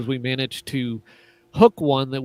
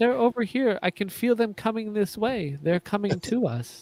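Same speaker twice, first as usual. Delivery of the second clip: put-on high, wispy little-kid voice with a slight lisp; 8 semitones higher, 4 dB quieter than usual. Retelling what a child said, in a high-pitched wispy voice. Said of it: "in this kind of high pitched, wispy voice".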